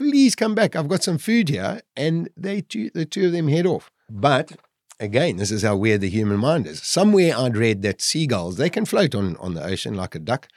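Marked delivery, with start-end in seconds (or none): 0.0-1.8 acted, very high, near-tearful begging voice. Retelling begging birds to come back: imitating own near-crying plea. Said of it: "I'm almost in tears again".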